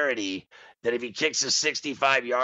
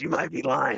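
put-on TV ad spokesman voice. Retelling a TV ad, imitating the Burger King commercial guy. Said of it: "He goes".

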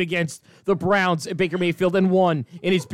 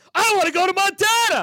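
high, loud, excited belted-out yell. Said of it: "J T started yelling".

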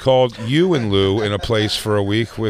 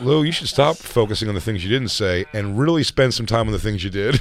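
normal talking voice

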